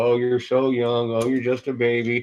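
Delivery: put-on voice of an elderly person. Mocking what old people tell the young: imitating old people. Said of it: "you've heard a thousand old people go".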